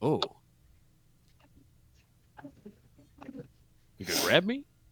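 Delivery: soft, swinging sing-song voice. Show how Nicola is talking while Comrade kills other guys, in the Chad meme voice. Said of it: "doing like the Chad voice meme".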